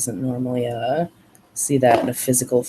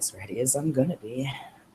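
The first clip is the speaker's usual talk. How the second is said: muttered under breath, much quieter; 8 dB quieter than usual. Narrating a scene, the storyteller gives her line, muttered under her breath. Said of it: "under her breath".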